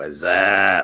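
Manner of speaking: deliberately deepened, very low put-on voice. Greeting viewers as a live stream starts, in a deeper voice. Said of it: "I've got my deeper voice going on right now".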